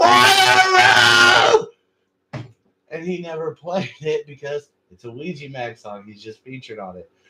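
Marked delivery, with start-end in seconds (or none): 0.0-1.7 piercing, shrill, very loud scream. Retelling a friend at a concert screaming from a balcony: imitating someone screaming.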